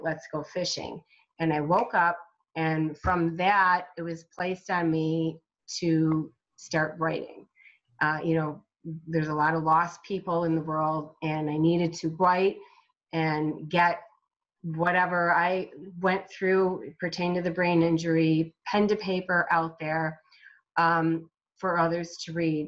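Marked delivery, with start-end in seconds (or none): 0.0-1.0 very calm and soft. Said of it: "And he then said very calmly".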